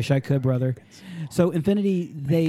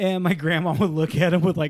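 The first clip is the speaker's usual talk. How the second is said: ordinary talk, nothing marked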